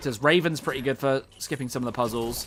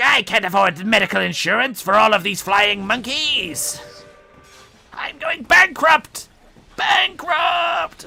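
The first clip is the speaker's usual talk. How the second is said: high-pitched voice, loud and slow; 8 semitones higher, 6 dB louder than usual. Joking about what the Wicked Witch says about her flying monkeys: imitating the Wicked Witch. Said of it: "I think the Wicked Witch is like".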